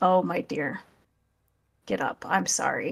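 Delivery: tender, kindly, gentle tone. Playing a character who asks a groveling woman to stand: softened voice. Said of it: "I'm going to soften my voice and say".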